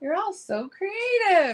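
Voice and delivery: mock sarcastic, very high, swooping, sing-song. Recalling a TikTok woman who makes fun of people, in a mock-sarcastic tone. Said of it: "she says it like in a sarcastic way".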